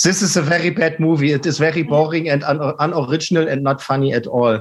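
very bad German accent in English. Retelling a joke told to others: very bad german english accent. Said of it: "in a very bad German English accent".

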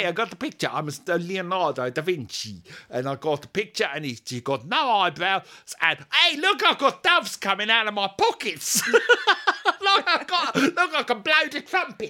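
put-on high, swooping South African accent. Play Leonardo da Vinci showing off the picture he has got, in a South African Leonardo da Vinci voice. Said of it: "he's South African Leonardo".

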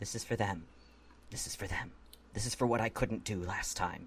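unusually hushed, very quiet voice. Voicing a character after a complicated maneuver before the audience: quiet voice. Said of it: "in a sort of a uncharacteristically quiet voice".

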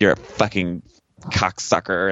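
imitated, mocking mean tone. Retelling a secret tape recording of a quarreling couple: imitating her mean tone. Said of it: "she sounds so mean in the recording".

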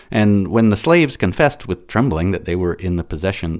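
plain

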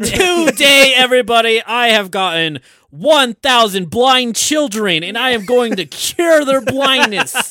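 belted out big, loud and slow. Joking that the Beast is a YouTuber in the mirror: MrBeast voice. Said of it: "it's just Mister Beast".

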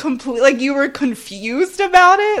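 incredulous, high, loud laughing outburst.

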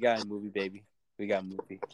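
super confident, totally self-assured boastful tone. Imagining an actor on set watching the director: super confident Corey Haim impression. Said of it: "super confident in it".

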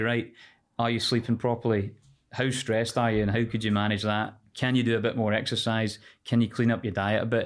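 ordinary talk

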